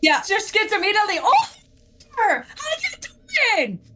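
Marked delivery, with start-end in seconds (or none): 1.2-3.8 high-pitched, crying, frightened scream. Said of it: "Do you scream back at him?".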